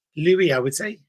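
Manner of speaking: ordinary delivery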